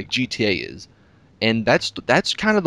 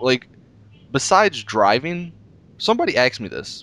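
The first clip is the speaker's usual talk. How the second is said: voice cracking, slower. Talking about open world games in a conversation, voice cracking. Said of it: "I just had a voice crack there".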